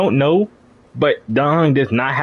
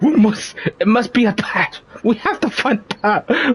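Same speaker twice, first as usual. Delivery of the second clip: mock angry, heartbroken delivery, high pitched; 8 semitones higher than usual. Imitating a game character's line that sounded angry and heartbroken. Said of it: "Why he sounds so angry and heartbroken?".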